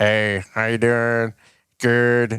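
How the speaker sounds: nasal voice impression. Talking about a man's unusual voice, imitating Josh's nasal voice. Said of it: "It's like the nasally nasal voice".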